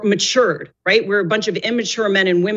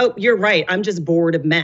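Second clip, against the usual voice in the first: put-on, mock-boastful bragging tone. Quoting a woman's reply after being told she seemed bored, imitating a boastful reply. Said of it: "she was boasting about it".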